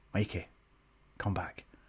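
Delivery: very quiet whisper, under the breath. Retelling a wrestling match, urging a partner mid-match: retelling a whisper. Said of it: "I'm trying to whisper".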